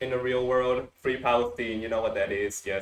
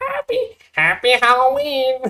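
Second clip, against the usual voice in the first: very high, very loud swooping game-character call; 12 semitones higher, 8 dB louder than usual. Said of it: "you gotta do it as Mario Party two Toad".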